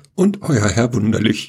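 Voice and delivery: faltering voice cracking and breaking mid-line. Host signing off to the listeners for the day, his voice cracking. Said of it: "jetzt ist ihm die Stimme versagt".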